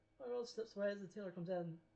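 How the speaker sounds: ordinary delivery, nothing marked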